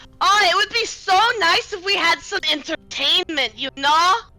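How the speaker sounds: heavy-handed, pointed tone, said aloud as an aside. Dropping a loud hint to friends in character: said pointedly out loud to friends. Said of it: "I will Out loud to my friends".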